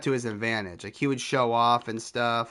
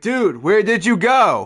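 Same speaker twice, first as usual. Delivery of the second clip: barking drill-sergeant yell, very loud, very high; 9 semitones higher, 8 dB louder than usual. Retelling a coworker picking up the phone: imitating someone screaming, drill instructor style. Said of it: "picks up screaming at me, like drill instructor style".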